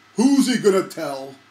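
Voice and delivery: very loud, booming, heavenly-sounding voice. Telling a joke about a hole in one, a voice from above answers; booming voice from above. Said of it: "a booming voice comes down from the top and says".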